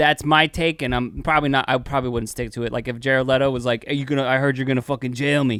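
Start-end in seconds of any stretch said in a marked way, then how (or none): 3.9-5.6 put-on New York accent. Imagining the actor answering a call to jail him: Jared Leto with New York accent. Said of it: "I don't know why he's got a New York accent".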